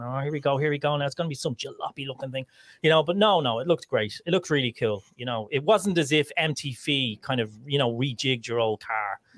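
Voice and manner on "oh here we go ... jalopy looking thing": put-on anxious, nail-biting, nervous, worried fretting. Retelling own past reaction while waiting to see a ship design: imitating own worried self. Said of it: "I was kinda worried sick. I was biting my nails going".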